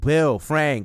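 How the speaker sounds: high, loud calling yell. Retelling a scene where Joel searches the house: imitating Joel yelling.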